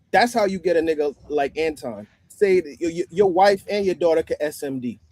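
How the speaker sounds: normal talking voice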